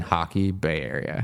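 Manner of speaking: ordinary talk, nothing marked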